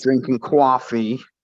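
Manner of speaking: horrible, high-pitched put-on New York accent. Answering a question about hobbies, bad new york accent. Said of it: "I was trying to do the New York accent".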